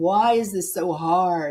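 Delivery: mock tearful, slow, pleading speech through sobs. Retelling lying on a cave floor, working with a shaman: retelling own sobbing. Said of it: "sobbing my guts out and just going".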